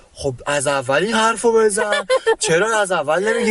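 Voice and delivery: put-on thick Turkish accent, laid on. Quoting a man who was with them, in a thick Turkish accent. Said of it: "با لهجه غلیظ ترکی".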